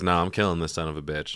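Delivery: plain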